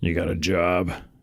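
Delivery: put-on gruff, rough-edged old man voice. Retelling the grandfather questioning the mom's first date, in a gruff voice. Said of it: "just goes to him and scruff voice".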